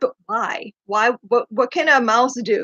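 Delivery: ordinary delivery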